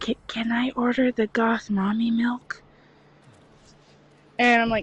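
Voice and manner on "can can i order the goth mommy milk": hushed, whispered voice. Retelling what a man said after looking at the menu: retelling a whisper. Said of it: "And he whispers".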